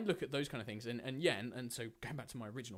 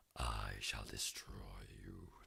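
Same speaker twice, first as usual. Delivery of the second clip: very low, creaky, slow, sinister villain voice; 7 dB quieter than usual. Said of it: "a slightly more villainous voice".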